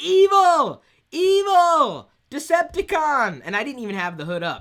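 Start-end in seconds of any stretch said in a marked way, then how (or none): 0.0-3.4 piercing, very loud, very high, drawn-out evil scream. The speaker recounts someone screaming at them, imitating someone screaming. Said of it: "someone was screaming".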